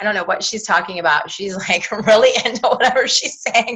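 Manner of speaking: talking through laughter, giggling between words. A host, distracted by Margie on screen, talks while laughing at her: laughing while talking. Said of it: "I'm laughing at Margie".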